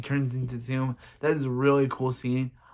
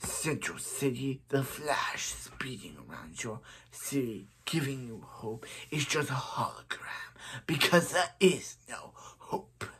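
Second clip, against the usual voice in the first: soft, whispered voice. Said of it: "I do a very good Zoom voice".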